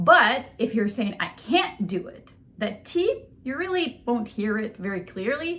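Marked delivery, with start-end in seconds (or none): 1.2-2.3 heavy, loud stress landing on can't. Contrasting can and can't in pronunciation, loud stress on can't. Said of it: "the word can is going to be really loud".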